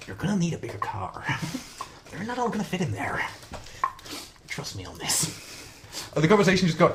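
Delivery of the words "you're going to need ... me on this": breathy, near-whispered delivery. Retelling lines from a chat, as the Joker: Joker voice. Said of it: "just the Joker saying".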